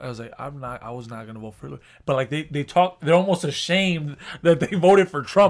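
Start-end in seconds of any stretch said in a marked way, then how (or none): 0.4-1.8 soft, fast, hushed murmur. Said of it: "this is literally how they tell me".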